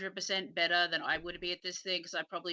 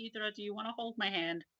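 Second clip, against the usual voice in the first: hushed, very quiet, soft voice; 3 semitones higher, 4 dB quieter than usual. A character waits a minute, then asks another character to hold hands: very quiet. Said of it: "He just very quietly goes".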